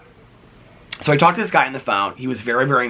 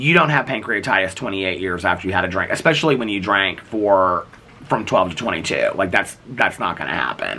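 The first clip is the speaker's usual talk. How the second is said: ordinary delivery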